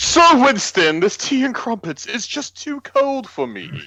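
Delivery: very high, loud, put-on posh British accent. Joking about a fancy dinner: put-on British accent. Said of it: "Are you required to speak in a British accent".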